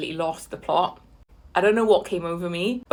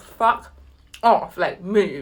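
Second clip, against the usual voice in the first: ordinary delivery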